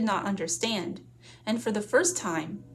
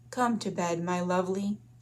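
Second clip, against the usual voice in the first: soft and silky, slower. A man lying down in bed speaks to the woman: soft, silky voice. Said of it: "in that voice like silk".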